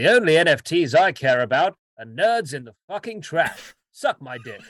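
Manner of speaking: grand booming voice. Quoting a tweet as read by an impersonator: Matt Berry impression. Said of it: "that was a very good impression".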